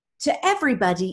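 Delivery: put-on accent from Britain.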